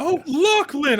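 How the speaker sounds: calling out very loudly. Retelling greeting lachlan so people can hear; very loud. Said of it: "I say very loudly".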